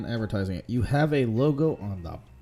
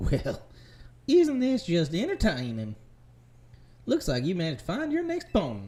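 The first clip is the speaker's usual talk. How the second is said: put-on sing-song Southern American accent; 6 semitones higher than usual. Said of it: "Everyone's got a southern accent".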